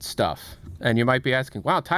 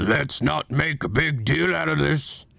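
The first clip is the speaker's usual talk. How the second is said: put-on character voice, slow and rough. Showing off a perfect impression with one line, in a Strong Bad impression. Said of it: "I can also do a perfect impression of Strongbad".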